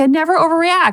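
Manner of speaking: dry, mocking sarcasm. Retelling what she said to her daughter: imitating her own sarcastic tone. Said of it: "I'm sarcastic in a different way".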